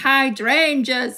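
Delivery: put-on "hydrangeas" pronounced in a Yorkshire accent. Retelling her late grandmother speaking in her head: grandmother's Yorkshire accent. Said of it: "her Yorkshire accent".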